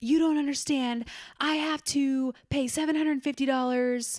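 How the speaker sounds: high-pitched, angry yelling from a woman. Retelling how a woman started yelling at the speaker; retelling a woman yelling. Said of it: "She starts yelling at me".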